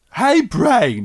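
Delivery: goofy, doofy cartoon voice. Recalling how a cartoon character talked: big doofy cartoon voice. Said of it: "He had like a big doofy cartoon voice".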